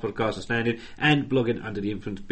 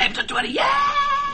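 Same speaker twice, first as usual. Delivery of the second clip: put-on excited monkey whoop, much higher, slower. Acting out how the other speaker should greet episode 20: mock-excited monkey impression. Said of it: "Nice monkey impression".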